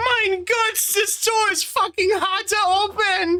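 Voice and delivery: put-on, very high, slow little German boy voice. Mocking another player's character voice choice: little German boy voice. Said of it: "a little German boy or something".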